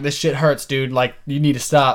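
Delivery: ordinary talk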